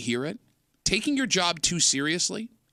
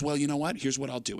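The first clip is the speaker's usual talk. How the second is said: mocking snotty tone, lower and quieter; 4 semitones lower, 4 dB quieter than usual. Retelling a hotel desk clerk's reply about keys: imitating a snotty clerk. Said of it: "she's being real snotty about it".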